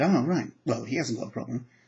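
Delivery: normal talking voice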